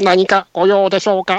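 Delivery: slow, high, hoarse, husky voice-assistant style voice. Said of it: "しゃがら声にしてたんで".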